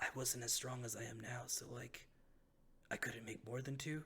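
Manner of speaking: hushed whisper in a character voice. Voicing a necromancer who admits a past weakness to the party: whispering in character. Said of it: "he whispers to you".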